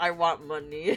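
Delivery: mock dead-level deadpan with zero motivation. Retelling what a friend said in class: imitating a deadpan friend. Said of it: "so deadpan, no motivation".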